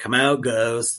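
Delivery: super sarcastic delivery. Retelling how the oldest brother dared the ghosts to come out: retelling a super sarcastic line. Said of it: "he says it super sarcastically".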